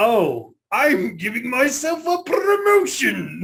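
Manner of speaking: very high, very slow, swooping sing-song cartoon voice. Asked for an impression, giving a line as the cartoon villain: Doctor Robotnik voice. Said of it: "can you do a Robotnik impression".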